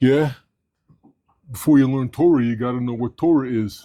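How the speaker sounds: deep, low, put-on New York accent. Retelling what a man told him about learning Torah, in a deep New York accent. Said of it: "Deep New York accent".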